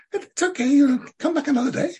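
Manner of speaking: very high, small, bird-like little voice. Quoting the interviewee reassuring the speaker after a ruined recording, bird-like little voice. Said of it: "in her lovely bird-like little voice".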